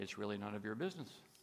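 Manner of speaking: muttering under one's breath. Retelling a dinner story, replying to a stranger's question: muttering under one's breath. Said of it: "But under my breath".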